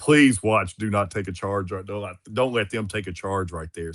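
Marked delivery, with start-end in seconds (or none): none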